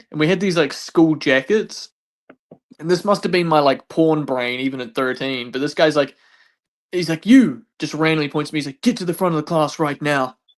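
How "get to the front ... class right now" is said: put-on drill sergeant voice. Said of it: "like a drill sergeant".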